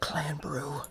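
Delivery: very quiet, barely audible whisper. The game master voices the gnome's words, which one player barely catches: almost inaudible. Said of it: "almost on almost inaudible completely".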